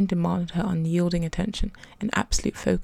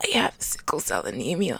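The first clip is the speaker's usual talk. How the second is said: words croaked out in a croaking voice; 3 semitones lower, 3 dB quieter than usual. A narrator reads a girl answering a concerned question: croaking. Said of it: "Amelia croaked".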